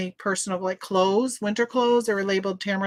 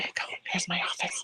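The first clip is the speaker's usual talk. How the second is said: hushed whisper, quieter; 10 dB quieter than usual. The speaker whispers so as not to cause audio feedback: whispering. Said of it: "I'm whispering because I don't want feedback".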